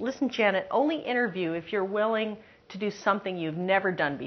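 ordinary talk

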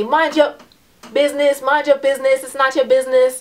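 high-pitched, loud, angry yelling.

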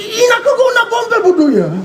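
furious, angry outburst.

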